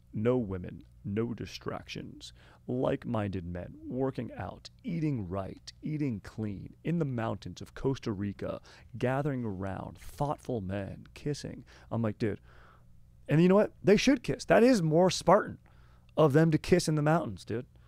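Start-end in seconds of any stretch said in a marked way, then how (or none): 0.2-11.7 slow, computer-generated promo narrator voice. Describing men's retreat videos, imitating their AI narrator voice. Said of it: "it's that AI voice".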